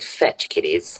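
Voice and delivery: whispered, snooty, hoity-toity tone. Imitating a woman who calls the group kiddies, snooty, hoity-toity voice. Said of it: "in her sort of snooty, hoity-toity voice".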